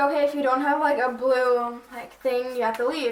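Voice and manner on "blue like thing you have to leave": ordinary talk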